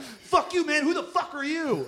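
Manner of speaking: shrill, very high, enraged, furious screaming. Retelling screaming at a heckler during a set: imitating own past furious screaming. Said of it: "I got so furiously mad that I screamed at him".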